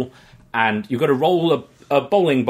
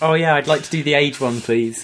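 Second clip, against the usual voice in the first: put-on bashful, timid, shy, nervous voice; 2 semitones higher than usual. Retelling asking a carnival guesser to guess their age: retelling a put-on shy, nervous voice. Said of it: "I'm gonna act all shy and nervous".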